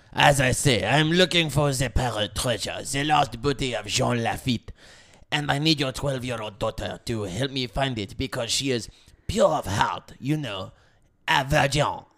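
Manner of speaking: put-on English spoken with a French accent. Acting out Deschamps greeting Jules in a skit: Deschamps voice. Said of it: "Deschamps convinced Jules to let him borrow".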